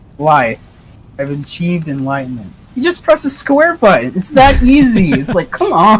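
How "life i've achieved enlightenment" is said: ordinary talk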